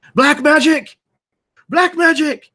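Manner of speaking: very high, loud, piercing, shrill shout. Voicing a rider calling out an alarm to the group: calling out loudly. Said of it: "he calls out loudly".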